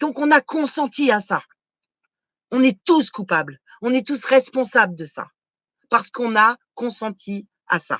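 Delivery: slow, worked-up, heated, insistent delivery. Blaming everyone for ignoring hunger in Africa, getting worked up. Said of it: "Excusez-moi, je m'énerve".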